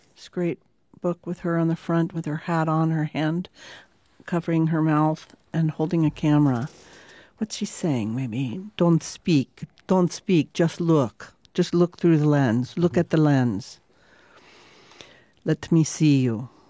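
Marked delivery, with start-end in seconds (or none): 8.8-16.4 put-on Transylvanian accent held on every line. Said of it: "I have [name] doing a Transylvania accent".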